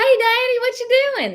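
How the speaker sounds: put-on very high, childlike, sing-song country twang. Retelling own words as a kid raised in the country: imitating own childhood country accent. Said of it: "When I was a kid, I'd be like".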